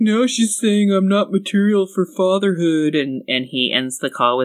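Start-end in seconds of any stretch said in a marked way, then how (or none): 0.0-3.0 acted-out tearful, close-to-crying tone. Retelling what a man said to his sister on a call: imitating a weepy voice. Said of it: "he's all weepy and he's like".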